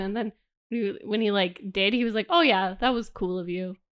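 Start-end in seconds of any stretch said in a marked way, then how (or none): 2.3-3.8 put-on flat deadpan delivery. Retelling how a character in a book thanks Percy: imitating a deadpan delivery. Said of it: "really deadpan about it".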